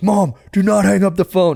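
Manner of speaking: mock, high-pitched, insistent yelling. Retelling calling his mom from a store: imitating himself screaming. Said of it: "screaming in this Verizon store".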